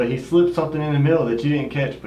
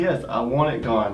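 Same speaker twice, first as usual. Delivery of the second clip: ordinary delivery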